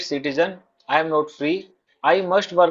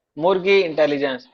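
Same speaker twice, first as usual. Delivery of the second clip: ordinary delivery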